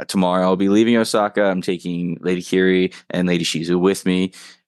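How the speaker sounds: ordinary talk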